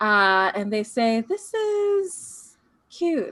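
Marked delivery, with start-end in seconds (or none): 1.2-3.3 very high, cat-like purring voice. Describing an encounter, the speaker voices what they say in a purring, cat-like voice. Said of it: "it almost sounds like a cat the way that it's purring".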